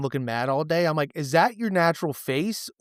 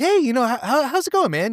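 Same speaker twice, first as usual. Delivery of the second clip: high, raised, friendly, sociable register; 10 semitones higher, 5 dB louder than usual. Showing the higher register he uses talking to someone else: higher-register voice. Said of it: "my register I talk higher up".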